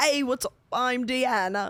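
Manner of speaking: slow pop singer voice, each word drawn out. Doing an impression after being asked: Prince impression. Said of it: "Prince is more like".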